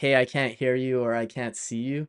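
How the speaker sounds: usual speaking voice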